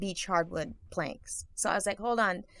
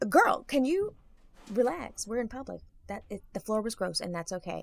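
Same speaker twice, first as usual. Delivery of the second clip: mock soothing, calming baby-talk voice; 4 dB quieter than usual. Retelling calming oneself down in public: imitating talking to a toddler. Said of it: "it's like talking to a toddler".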